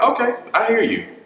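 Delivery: giggly, laughing, very high-pitched voice. Retelling how the partner answered him about marrying: imitating someone laughing while talking. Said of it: "So she's laughing".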